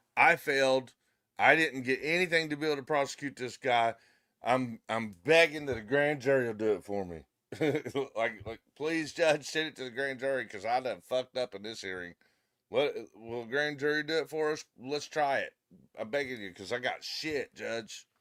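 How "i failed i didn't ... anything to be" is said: plain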